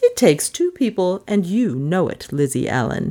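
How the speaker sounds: firm, stern chiding with amusement underneath. Narrator reading a mistress answering her servant; stern but amused. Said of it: "But she had never felt less calm in all the long years of her life. ... said [name] primly. / [name]'s voice was composed, / But she had never felt less calm in all the long years of her life. / I hav".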